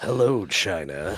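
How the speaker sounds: low, deep, dropped voice. Doing lines as a company head: Mike Morhaime voice. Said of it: "other Mike Morheim lines".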